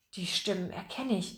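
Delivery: whispering excitedly. Overhearing two men talking about a job, a listener speaks up, excited whisper. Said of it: "flüsterte Pomme de Terre aufgeregt".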